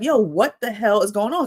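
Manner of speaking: frantic, panicked exclamation. Retelling spotting a stranger at the neighbor's door at night: retelling own panic. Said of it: "I'm panicking".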